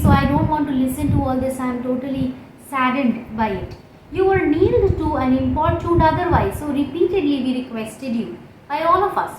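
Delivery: ordinary talk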